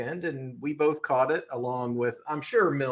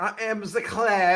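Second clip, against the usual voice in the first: loud, slow, drawn-out, put-on French accent; 7 semitones higher, 5 dB louder than usual. Introducing oneself on the podcast as a joke: put-on French accent. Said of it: "Why are we speaking in a French accent?".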